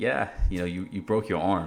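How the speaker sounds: normal talking voice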